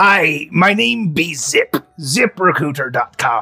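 small, piratey little man voice. Voicing a small pirate calling from the dock: small piratey man voice. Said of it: "a small piratey man".

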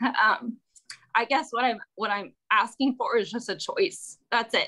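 trembling, shaky, nervous, unsteady voice. A parent addressing the mayor, getting a little shaky. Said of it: "sorry, I'm getting a little shaky".

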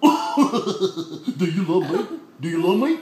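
very low, slow cartoon drawl, every word dragged. Showing a child how to do a voice: Goofy voice. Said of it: "I want you to do Goofy like this".

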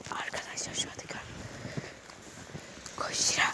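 soft, unvoiced, urgent, sneaking whisper.

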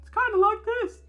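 put-on very high, shrill, loud girly voice. Reading from David's file, the speaker demonstrates his voice: David's girly voice. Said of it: "And he has a girly voice".

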